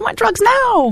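funny, silly, very high-pitched voice. Explaining how to give an inner voice a funny voice, using the Veruca Salt voice. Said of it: "Mine's Veruca Salt from Charlie and the Chocolate Factory".

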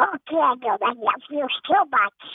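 put-on cartoon duck voice. Speaker retells how his mom would tell him she loved him, Donald Duck voice. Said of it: "we would always come back to the Donald Duck voice".

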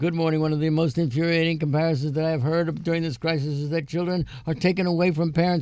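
rushed, very fast, rattled-off reading aloud. Reading a long letter aloud before going to news, reading very fast. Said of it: "You know why I'm reading so fast?".

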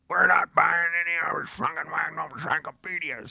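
very high pitch, firm and shutting down. Telling how your mom came out and refused to buy encyclopedias, giving her a Burgess Meredith voice. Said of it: "I make her sound like Burgess Meredith".

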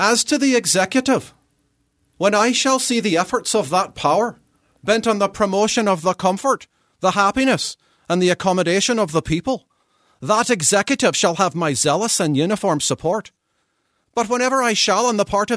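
put-on high imperfect Irish accent. Read out the 1798 words that got an Irish immigrant charged with sedition, in an imperfect put-on Irish accent. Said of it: "he had an Irish accent. So please forgive me. This is not the best accent".

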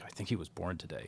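soft, hushed stage whisper. Speaker recalls his wife leaning in during a play, imitating his wife half-whispering. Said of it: "she kind of whispered".

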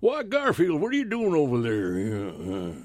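drawling cowboy voice, "there" stretched, swooping pitch. Speaker demonstrates the kinds of voices he used to do, Slim Pickens-style voice. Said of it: "all those kind of Slim Pickens kinds of voices".

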